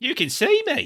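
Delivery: put-on high, loud, broad Australian accent. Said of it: "I don't know why he's got an Australian accent".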